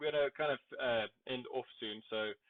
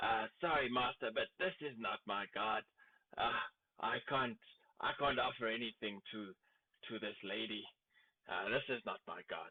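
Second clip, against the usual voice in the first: soft, hushed half-whispered stage whisper; 2 semitones lower, 4 dB quieter than usual. Voicing a character who declines to offer at the altar: half-whispering in character. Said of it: "he kind of whispers to you".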